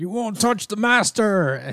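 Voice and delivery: very high-pitched, dopey, doofy big monster voice. Retelling a comic scene where a monster guards its master: voicing a big doofy monster. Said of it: "a big doofy monster dude is like".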